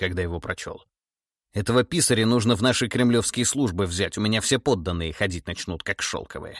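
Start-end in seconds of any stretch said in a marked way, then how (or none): none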